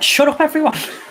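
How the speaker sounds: screamed out at a very high pitch. Imagining being in a horror movie: acting out screaming at everyone. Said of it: "screaming at everyone".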